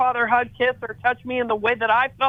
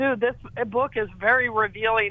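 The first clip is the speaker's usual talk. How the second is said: ordinary talk, nothing marked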